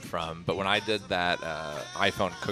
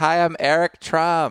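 poor put-on accent, shrill, slow, very high, booming; 10 semitones higher, 10 dB louder than usual. Pretending to phone a restaurant as Eric Trump: put-on Eric Trump voice. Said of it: "My accent's not very good".

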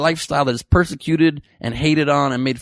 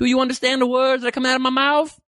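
very high, horrible, squealing put-on voice; 9 semitones higher than usual. Doing a quick impression for the viewers: horrible Chris Tucker impression. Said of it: "It's a horrible Chris Tucker impression".

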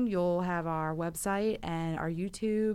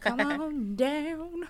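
playful put-on country accent, pitched up; 8 semitones higher than usual. Inviting listeners to an event in philly, country accent. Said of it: "I don't know why I said it like a country".

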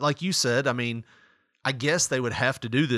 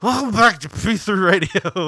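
very loud, very slow, drawn-out mock drunk announcer; 8 semitones higher, 9 dB louder than usual. Retelling recording a radio show late at night: imitating own drunk past self. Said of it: "And you're drunk".

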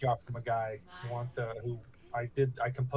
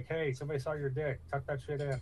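ordinary talk, nothing marked

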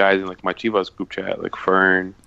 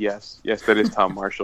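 put-on overeager, emphatic blurted delivery, no restraint. Retelling how they answered a friend's question: imitating own loud answer. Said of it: "mad loud".

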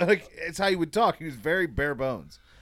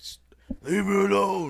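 slow, high-pitched yelling. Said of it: "he was yelling like Stallone".

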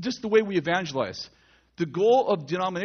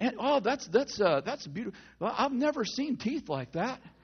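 pitched-up flattering salesman delivery; 5 semitones higher, 5 dB quieter than usual. Retelling how a salesman on a car lot flatters you: imitating a car salesman. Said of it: "the salesman is like".

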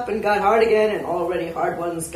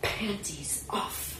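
hushed, whispered hiss; 13 dB quieter than usual. Reading a story, voicing the madam as she brushes past the narrator: hissed. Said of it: "she hissed into my ear".

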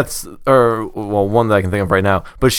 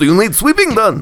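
fake Russian accent, very high-pitched; 9 semitones higher than usual. Among friends, doing one of the usual impressions, put-on Russian accent. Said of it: "every one of your impressions is Russian".

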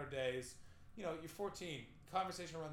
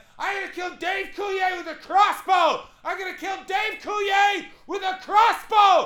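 very loud, high-pitched screaming, repeated over and over; 23 dB louder than usual. Telling a story about a man who started yelling in the house, retelling him yelling. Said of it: "he starts just yelling".

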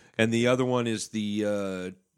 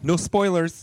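high, put-on teenage girl voice; 9 semitones higher, 4 dB louder than usual. Talking about a beer he tried, in a teenage girl voice. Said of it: "that's my teenage girl voice".

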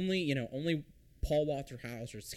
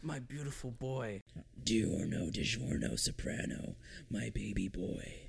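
put-on slow, low, drawn-out gravelly voice; 3 semitones lower, 4 dB quieter than usual. Doing a bit addressing his son, in a Clint Eastwood voice. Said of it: "I'm doing my Clint Eastwood voice".

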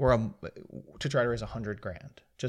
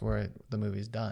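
normal talking voice

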